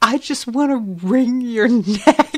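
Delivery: slow, angry laugh through tears, half crying. Retelling the woman answering her partner: imitating mad laughing through tears. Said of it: "continuing to, like, laugh, but, like, there are tears".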